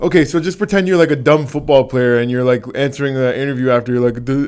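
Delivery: ordinary delivery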